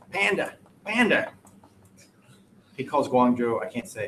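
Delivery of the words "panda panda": put-on Boston accent, pitched up. Imitating the middle school principal saying panda: imitating a principal's boston accent. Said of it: "He's got a nice Boston accent".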